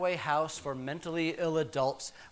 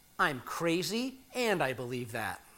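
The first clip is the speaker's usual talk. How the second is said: ordinary delivery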